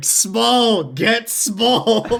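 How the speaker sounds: full-on, high, shouted yell. Playing a character yelling at DiCaprio to get small: yelling as Rex. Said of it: "start yelling".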